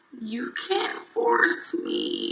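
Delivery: soft, creaky, crackling vocal fry. Speaker retells their own past reply to someone pushing them: vocal fry. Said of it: "How do y'all like that vocal fry just then?".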